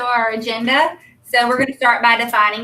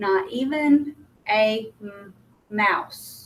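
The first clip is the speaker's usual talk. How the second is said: soft, stumbling, halting disfluent reading; 2 semitones lower, 5 dB quieter than usual. Demonstrating how a student reads without accuracy: stumbling inaccurate reading. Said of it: "it might sound like this".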